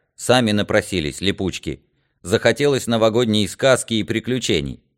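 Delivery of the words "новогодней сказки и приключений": plain reading voice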